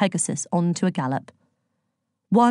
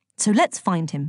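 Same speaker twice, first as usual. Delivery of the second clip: ordinary delivery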